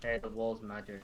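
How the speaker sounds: acted, completely straight-faced, flat deadpan delivery. Retelling what they said to their party when the wall lit up, retelling a deadpan remark. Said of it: "my party like completely deadpan".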